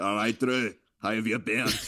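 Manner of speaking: thick, heavy put-on Northern Irish accent. Describing an actor playing a villain, imitating Justin Theroux's Northern Irish accent. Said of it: "he thickens it up. As it comes out like".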